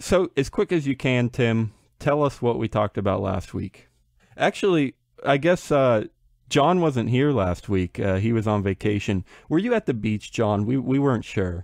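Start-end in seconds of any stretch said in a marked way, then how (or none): 9.5-10.7 pointed, interrogating, official-sounding, accusatory tone. Asking someone who missed last week whether he was at the beach, accusatory. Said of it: "accusatory right there".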